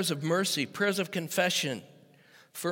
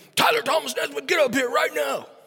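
mock stern, angry dad voice, loud and high; 8 semitones higher, 5 dB louder than usual. Father retelling how he calls his kid upstairs, put-on angry dad voice. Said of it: "with my angry dad voice".

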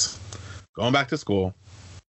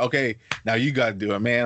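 ordinary talk

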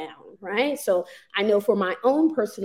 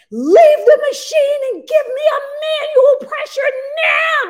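urgent, barked, very loud, high-pitched yell; 10 dB louder than usual. Retelling a woman yelling at a nurse as the speaker nearly passed out, retelling someone yelling. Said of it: "she was literally yelling".

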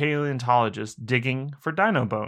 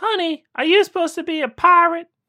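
put-on very high, sweet, raised old-lady voice; 6 dB louder than usual. Telling a trick-or-treat joke, voicing the old lady at the door in an old lady voice. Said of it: "I tried to insert a little voice to it".

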